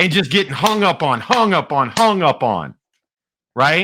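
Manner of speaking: usual speaking voice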